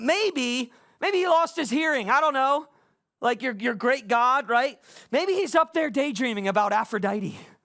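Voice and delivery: mock-sarcastic taunting, acted straight sarcasm. Retelling how a man mocked people whose god gave no answer, sarcastic taunt. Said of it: "with the straight sarcasm".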